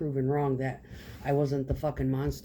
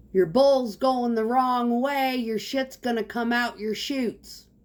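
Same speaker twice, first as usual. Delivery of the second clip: very high, loud hollering, projected as if across distance; 10 semitones higher, 7 dB louder than usual. Retelling yelling a warning to a builder across a yard: retelling a yell across a yard. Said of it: "I yell from across the yard".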